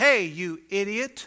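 put-on tiny little kid's voice. A parent retells what their son said from the back seat, imitating Johnny's little voice. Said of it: "I hear this little voice".

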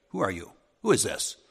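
acted, mock accusing tone. Acting out someone's reaction on the phone, in a mock accusational tone. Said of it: "Kind of like that accusational tone".

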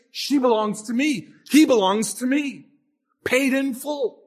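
slow, mocking, gloating delivery. Acting out a defender answering accusers, with put-on gloating mockery. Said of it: "almost gloatingly and mockingly pushes the receipt in their face".

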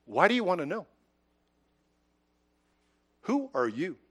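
nice, kindly, soft, loving tone. Telling a story, speaker acts out their reply to a man pounding on the door, in a nice, loving tone. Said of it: "In a nice tone, loving".

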